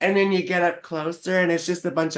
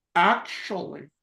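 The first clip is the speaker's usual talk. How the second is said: cartoon character voice. Saying well actually to another speaker, sounding like the Grinch. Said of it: "you sound like the Grinch".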